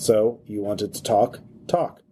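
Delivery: very calm, even, machine-made servant robot voice. A game narrator voices a personal servant robot addressing the player, calm synthesized voice. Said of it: "you hear a very calm, synthesized voice".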